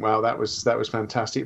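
ordinary talk

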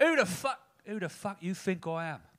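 put-on Cockney accent.

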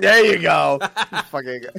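loud hollered blurt. During a game, a player does a Leslie Jones impression. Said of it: "That's my Leslie Jones impression".

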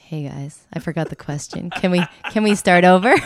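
put-on mellow voice. Teasing a co-host who is not there yet, imitating Joe, mock-mellow. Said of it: "constantly mellow".

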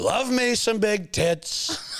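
extremely high and slow delivery. Answering a request to do an impression: Donald Trump impression. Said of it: "Donald probably would say that".

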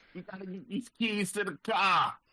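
very high, bad Boston accent sounding like New York. While talking about Wahlberg for a role, try a horrible Boston accent that sounds New York. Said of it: "a horrible New York accent being a Boston accent".

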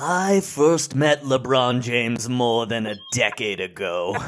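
very slow, drawn-out folksy voice. Reading an essay aloud as imagined Warren Buffett: Warren Buffett voice. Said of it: "a Warren Buffett voice".

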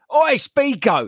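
put-on shrill, very high yell at full volume. Retelling how a fellow runner called out to another runner: imitating a loud shout. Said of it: "shouted at him as loud as he can".

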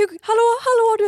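mock shrill, high, very loud panic. Retelling waking to find him choking in his sleep, acting out her panic. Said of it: "Jag bara fick panik".

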